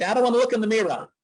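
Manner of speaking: high, loud put-on New York accent. Retelling what a young daughter said: imitating a child's New York accent. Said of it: "she developed a New York accent".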